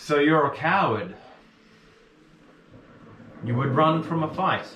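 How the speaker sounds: loud, high, taunting yelled voice.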